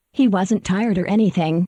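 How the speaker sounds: ordinary delivery, nothing marked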